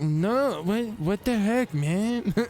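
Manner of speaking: sloppy cartoon voice, high, slow and drawn out. Retelling a clip of a kid answering his mom: Eric Cartman voice. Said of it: "Sounds like a bad impression of Eric Cartman".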